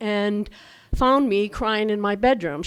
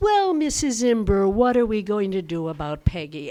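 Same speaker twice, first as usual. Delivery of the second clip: syrupy, treacly, falsely sweet, hypocritical tone. Retelling how the teacher spoke to Mom: imitating a treacly hypocritical voice. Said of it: "begins in this treacly, hypocritical voice".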